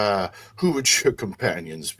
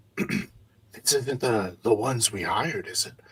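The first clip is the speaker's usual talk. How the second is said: hoarse, rasping, loud stage whisper, easily heard; 4 dB quieter than usual. Voicing a character who leans in to ask about hired men: hoarse loud stage whisper. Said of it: "quietly whispering, it's a rather hoarse, very easily heard voice".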